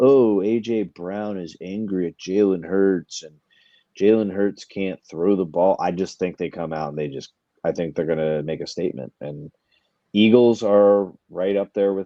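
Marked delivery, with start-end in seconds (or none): none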